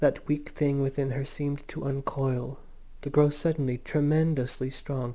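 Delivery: plain reading voice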